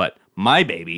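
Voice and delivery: stress on my. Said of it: "not my baby".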